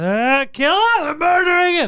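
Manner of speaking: acted panicked outburst. Retelling a coworker seeing photos of his toy: imitating someone panicking. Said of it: "he panicked. He's like".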